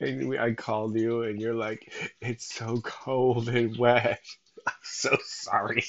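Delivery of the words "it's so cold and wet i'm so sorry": slow speech broken up by laughs. Retelling a son's phone call, laughing while talking. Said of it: "I really wish I could say that without laughing".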